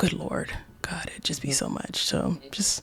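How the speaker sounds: soft unvoiced whisper, sounding exhausted and worn out.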